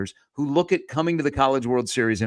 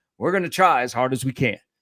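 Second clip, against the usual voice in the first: put-on North Carolina accent. Retelling what a head coach said about recruiting: Scott Forbes's North Carolina accent. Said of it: "said in his North Carolina accent".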